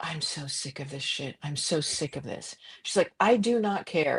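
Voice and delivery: put-on quiet, even, unraised voice. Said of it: "she didn't raise her voice".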